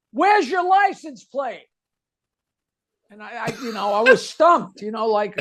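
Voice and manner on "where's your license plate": high, put-on, shouted heckler's yell. Retelling a guy at the back of the room: imitating someone yelling. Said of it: "the guy in the back of the room yells".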